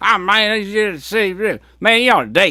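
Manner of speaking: put-on terrible Cajun accent, pitched very high. Quoting the man who meets Joe Dirt in Baton Rouge in the movie, terrible Cajun accent. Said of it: "They did the terrible Cajun accents".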